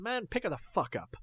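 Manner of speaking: put-on very high, out of character, accent and persona dropped. Retelling a film scene where a character breaks character: imitating character dropping his accent. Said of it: "This accent, this whole persona goes".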